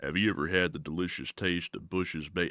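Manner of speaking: very low, soft, hushed, close-mic ad voice. Moving closer to the mic, speaker does a quiet Sam Elliott voice. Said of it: "the Sam Elliott voice comes really easy. Let me let me do that one real quick".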